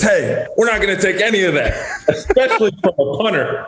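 high, laughing, scolding tone. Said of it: "The ref looks over at him and says".

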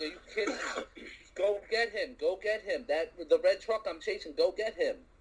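mock, heated, frustrated, angry yelling. Recounting getting pulled over while chasing a truck, retelling yelling at the cop. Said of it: "I'm sitting there yelling at the cop like".

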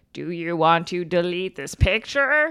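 deep, very low, robotic automated computer voice. Remembering an old program's delete prompt, in a deep automated computer voice. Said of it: "this automated deep computer voice would be like".

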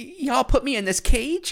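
shrill, very high, loud woman's voice. Reading a news quote from the arrested woman: imitating Mrs. Menifeld. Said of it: "your impressions are spot on".

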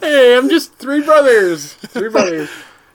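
high, drawn-out, stretched-out cartoon voice. Repeating the line to show how it sounded: Rick and Morty pitch voice. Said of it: "That sounded like a Rick and Morty, like, pitch".

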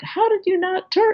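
mock yell, very high and shrill. Recounting a woman in a suit who got out of her car, retelling a yell. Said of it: "she starts yelling at me like".

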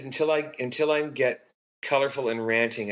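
plain

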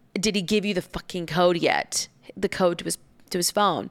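normal talking voice

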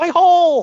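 shrill, very high, overacted yelp. Retelling how a wrestler landed on the apron: imitating Ronda yelling. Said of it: "where she landed on her ass on the apron and yells".

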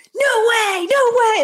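long, very high, slow, drawn-out shriek. Recalling watching a player's escapes during a game, retelling screaming at the tv. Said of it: "just screaming".

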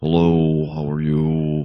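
put-on droll, slow American accent. Showing the American accent two actors share: Hugo Weaving's droll American accent. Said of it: "which is this very droll".

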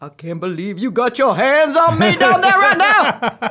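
loud, high-pitched, swooping, big, swinging star voice. Doing an impression of Angela Bassett getting a four-hand massage: Angela Bassett impression. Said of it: "this is Angela Bassett getting a four-hander".

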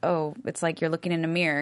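ordinary talk, nothing marked

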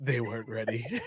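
storybook narrator voice, announcer-style delivery. After insisting the team was ready, the speaker switches to mock narrator voice. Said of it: "Narrator voice".

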